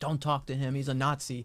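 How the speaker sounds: urgent, insistent yelling, called out loud. Retelling how a protester followed him to interviews: imitating someone yelling. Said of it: "yelling at people".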